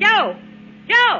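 very high-pitched, loud calling out. Calling Joe into the office: yelling. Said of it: "What are you yelling about".

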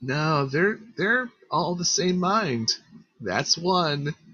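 whispering. Voicing a creature heard by a player in a fight: whisper. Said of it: "And he whispers".

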